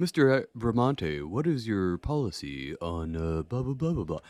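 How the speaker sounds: smooth, polished radio announcer voice. Mimicking a typical interviewer asking a question, in a put-on radio voice. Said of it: "Let me get my radio voice on".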